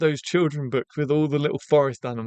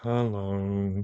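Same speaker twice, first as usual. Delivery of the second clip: put-on character voice, slow and drawn out; 7 semitones lower, 7 dB quieter than usual. Saying hello right after admitting they can't do the impression: Eeyore voice. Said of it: "I can't do an Eeyore impression".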